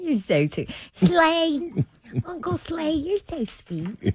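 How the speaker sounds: put-on high little-girl voice, "slay" drawn out. Talking sweetly to Slay while imitating Baby Babs. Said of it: "You sound like Baby Babs".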